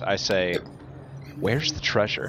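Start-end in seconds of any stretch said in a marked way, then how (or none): 1.4-2.3 low muttering under the breath. Looking at a map in a game, muttering under breath. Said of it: "I just kind of mutter under".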